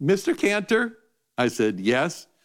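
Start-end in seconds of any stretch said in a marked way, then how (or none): 0.0-1.0 put-on small, high-pitched, nine-year-old little girl voice. Retelling a phone call, quoting the young caller's greeting in a high-pitched nine-year-old voice. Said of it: "in this high-pitched 9-year-old voice".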